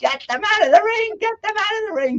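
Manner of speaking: mock shrieking frantic yell, very high. Retelling Don King on a rotary phone during a fight: screaming like Don King. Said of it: "he's screaming".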